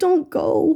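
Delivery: put-on shattered, broken, heartbroken voice. Retelling a character begging his apprentice not to leave: imitating a broken-sounding plea. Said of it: "he sounds so broken and he's like".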